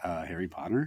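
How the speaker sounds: hushed, soft, condescending, talking-down tone. Retelling a son's answer about his favorite frog: imitating son's condescending tone. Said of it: "really kinda condescendingly".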